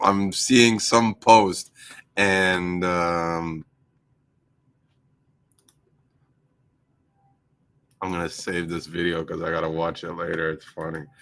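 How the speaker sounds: words broken up by laughter while talking. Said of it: "I'm laughing".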